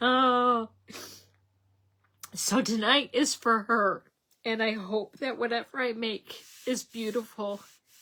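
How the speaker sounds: sobbing, ugly crying, voice breaking. A speaker dedicating tonight to a late sister-in-law, ugly crying. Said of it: "I'm ugly crying".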